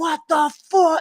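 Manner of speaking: angry, frustrated, high-pitched yelp or scream. Retelling being unable to fix a problem while alone: retelling own screaming. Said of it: "I'm screaming".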